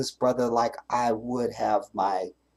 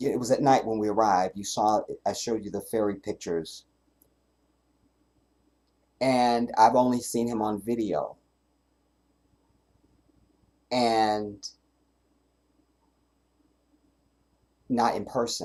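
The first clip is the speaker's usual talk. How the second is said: fighting off tears, close to crying. Telling viewers about arriving at night to meet a brother: holding back tears. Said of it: "I'm not going to cry in this video".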